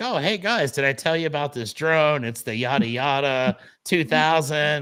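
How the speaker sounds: show-off, boasting, bragging tone. Retelling how they showed off a drone to people: imitating own show-off bragging. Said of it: "So I decide to show off a little bit".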